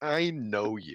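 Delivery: mean, patronizing, condescending tone. Retelling what a random person said to an older brother, mock-condescending tone. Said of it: "like in a very condescending way".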